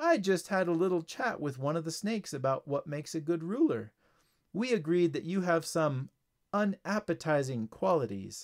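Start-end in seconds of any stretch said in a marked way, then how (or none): none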